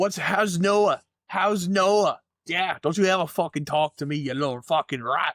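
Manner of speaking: bad, high, poorly put-on Irish accent. An Irish speaker tries an accent they admit they can't do, bad Irish accent. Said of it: "I'm Irish and I can't do that accent".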